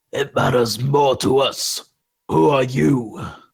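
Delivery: coarse, rough, gravel-edged creature voice. Describing sloshing water and clacking claws, the narrator voices a second speaker in a gravelly voice. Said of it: "a second more gra- gravelly voice".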